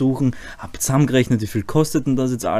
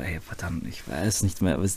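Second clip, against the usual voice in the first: put-on despair, much lower, quieter; 7 semitones lower, 9 dB quieter than usual. Retelling what you said to her back then, acting out despair. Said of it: "Ich war wirklich schon verzweifelt".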